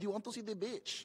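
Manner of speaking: put-on soft, high, thick, heavy Filipino accent. Speaker retelling his mom asking about the beach, imitating Mom's thick Filipino accent. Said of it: "she has a really thick accent".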